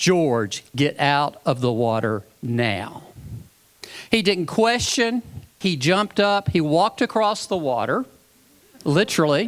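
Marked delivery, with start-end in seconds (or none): 0.0-3.0 deep, firm classroom-teacher voice. Retelling seeing something surface behind a swimmer and calling him out: teacher voice. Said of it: "in my best teacher voice".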